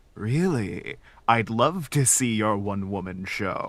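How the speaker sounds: eerie, ominous, echoing creature voice. Acting out a creature that seeks out artists, ominous, echoey creature voice. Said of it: "like echoey voice".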